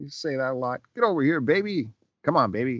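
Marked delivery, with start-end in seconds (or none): 0.9-2.8 very confident tough-detective voice. Showing how Kojak talks, very confident: confident Kojak voice. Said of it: "Very confident".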